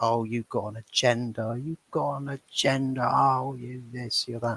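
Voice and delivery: heckling, accusing jabs, like mock screaming. Retelling how everyone reacted to another bloke: imitating people screaming. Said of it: "everyone's screaming in his ears like".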